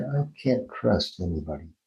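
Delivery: sorrowful, sad, low, soft voice. Demonstrating a sound exercise by saying a practice phrase: sad. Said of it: "Say it angry".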